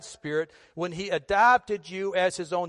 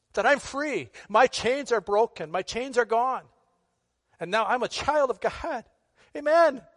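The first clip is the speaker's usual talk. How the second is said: overcome, heartfelt, emotional voice, pitched up; 5 semitones higher than usual. An engineer preaching ends a prayer aloud, getting emotional. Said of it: "That wasn't in my notes to get emotional".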